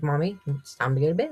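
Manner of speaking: coaxing, nudging put-on pet voice. Retelling what her pet seems to say at bedtime, voicing her pet Georgie. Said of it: "he'll rub on me and be like".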